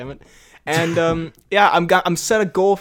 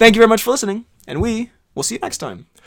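voice failing partway through, pitched higher; 5 semitones higher than usual. Host signs off the episode, thanking listeners, voice giving out. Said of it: "My voice just gave out as I was saying".

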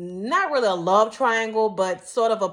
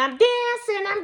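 very high cartoon voice with New York accent; 13 semitones higher than usual. Describing an old cartoon episode, in Olive Oyl's New York accent. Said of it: "she had like that New York accent".

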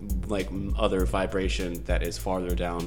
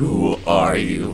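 horrifying, terrifying voice, growing louder; 2 semitones lower, 7 dB louder than usual. On the unknown entity's turn, voicing it questioning the group: horrifying voice. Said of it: "You hear a horrifying voice come through".

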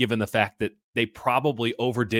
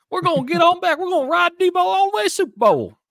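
loud, shrill, very high, fake Southern accent; 7 dB louder than usual. Mocking a football team's comeback pitch, in a fake Southern accent. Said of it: "No one on this team has a Southern accent".

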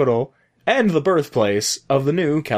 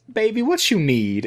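kindly, sweet Southern lady voice, pitched up; 7 semitones higher than usual. Retelling a greeting at a hotel foyer: imitating a sweet southern lady.

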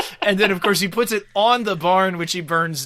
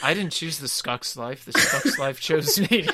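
mock-deadpan delivery, lower pitch; 3 semitones lower, 4 dB quieter than usual. Describing a favorite movie scene, quoting a character's line: retelling a deadpan line. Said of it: "But just like totally deadpanning it".

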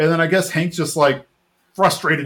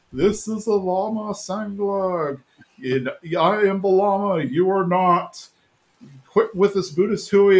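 slow, drawn-out, spooky ghost voice; 4 semitones higher than usual. Retelling a scene where Hank tries to fool Bobby, in Hank's ghosty voice. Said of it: "in like the ghosty voice".

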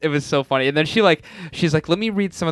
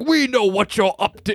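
put-on old-timey 1700s villager voice; 6 semitones higher than usual. Retelling a funny scene where a man talks like a 1700s villager. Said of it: "talking like a like villager from the 1700s".

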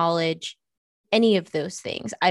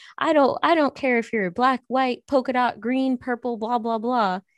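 exaggerated put-on American Southern drawl, pitched up; 5 semitones higher than usual. Imitating people who say they ignore skin color, Southern accent. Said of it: "I did that with a Southern accent".

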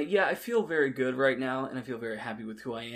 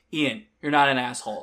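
mock irritated tone, louder; 8 dB louder than usual. Retelling how she answered his anxious remark about himself: mock-irritated tone. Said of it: "in this irritated tone".

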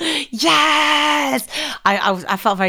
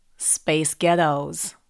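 put-on, fake American accent; 8 semitones lower, 4 dB quieter than usual. Asked to say two words, the speaker answers in an American accent. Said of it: "can you say space ghettos in an American accent".

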